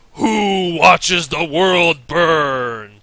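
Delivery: slow, gravelly, echoing booming bellow, "burn" stretched long. A voice speaks as her hand touches the chamber door: low, gravelly bellowing voice. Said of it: "a bellowing, low, gravelly voice that echoes".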